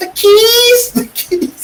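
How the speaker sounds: really high-pitched voice, word "keys" drawn out. Retelling a movie scene where she digs for keys: imitating Jamie Lee Curtis's high-pitched voice. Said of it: "got that really high-pitched voice".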